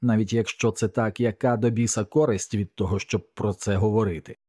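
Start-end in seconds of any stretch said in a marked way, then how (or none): none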